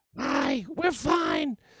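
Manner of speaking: put-on woman's voice, pitched very high. Retelling how a man tried to keep police from entering, imitating a woman's voice. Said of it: "by imitating a woman's voice".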